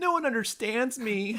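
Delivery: high, teary, sobbing voice, crying while talking. Retelling a story, speaker acts out a character's line: mock crying. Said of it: "She cries".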